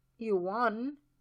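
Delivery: soft, quiet, gently spoken words. One man to another, softly.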